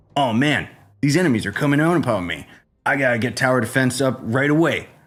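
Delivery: put-on over-acted commercial actor voice. Mocking scripted phone-ad actors pretending to play: mocking fake scripted ad actor. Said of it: "trying to act like they're playing the game".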